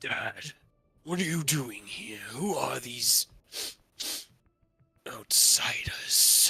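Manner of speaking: huge, booming, bellowing dragon voice. Game narrator voicing a large bronze dragon addressing its dad, bellowing dragon voice. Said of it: "You hear a bellowing voice".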